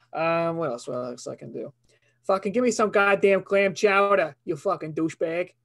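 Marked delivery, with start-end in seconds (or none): 2.2-5.4 put-on Boston accent, pitched up. Speaker demonstrating his boston accent, boston accent. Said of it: "My Boston accent".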